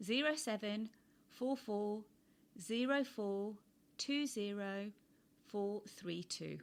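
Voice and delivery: slow, careful, deliberate pace. Repeating a phone number so listeners can write it down: said nice and slow. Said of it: "I said that nice and slow".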